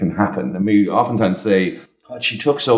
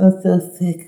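put-on babyish little high voice; 11 semitones higher than usual. Explaining care-seeking behavior, showing how sick adults talk, in a baby voice. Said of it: "we kind of tend to get a baby voice and say".

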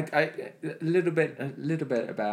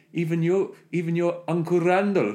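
put-on South African accent; 3 semitones higher, 3 dB louder than usual. Imitating a film character's line: imitating a South African accent. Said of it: "he does the South African bit".

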